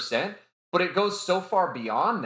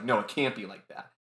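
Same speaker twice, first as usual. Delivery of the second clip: put-on angry outburst, protesting; 4 semitones lower, 4 dB quieter than usual. Retelling how a character reacts to sad news: imitating an angry reaction. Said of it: "He just reacts out in anger".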